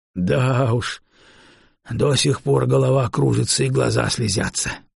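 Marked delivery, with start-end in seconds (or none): none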